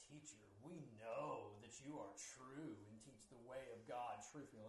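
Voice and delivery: put-on fake pious tone. Quoting the questioners' words to the teacher from the verse, with put-on fake piety. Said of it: "I always kind of try to say this with the fake piety".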